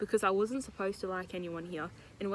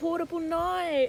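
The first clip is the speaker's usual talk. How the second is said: put-on Australian accent; 10 semitones higher, 5 dB louder than usual. Asked to say a phrase, showing off a newly unlocked australian accent. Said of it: "Say portable nights".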